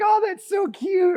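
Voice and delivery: high, slow, swooning gush. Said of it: "You'd be like".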